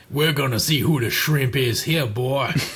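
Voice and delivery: put-on Cajun accent. Going through Mega Man bosses, quoting the next one in a Cajun accent. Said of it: "unless he's got a Cajun accent".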